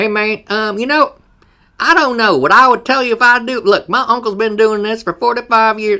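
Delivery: very loud, shrill, high, booming hillbilly voice. Imagining an AI answering a question: redneck hillbilly voice. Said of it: "a redneck hillbilly voice of A I".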